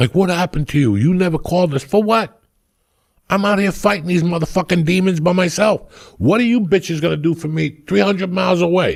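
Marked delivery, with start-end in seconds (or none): 0.1-1.8 put-on angry yelling. Recounting an uncle's phone call to Cuba, acting out the relatives: imitating relatives yelling. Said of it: "they're all yelling at me on the phone".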